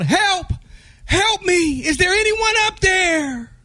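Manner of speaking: mock screaming. Telling a joke, voicing a man hanging off a cliff: imitating a scream for help. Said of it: "He screams out".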